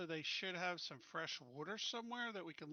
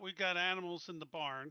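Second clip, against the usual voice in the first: ordinary talk, nothing marked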